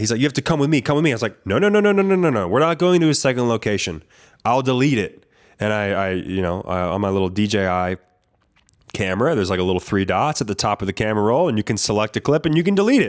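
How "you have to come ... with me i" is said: mock freaking out, much faster. Speaker recounts a confrontation over a camera clip, imitating the man freaking out. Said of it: "he starts freaking out".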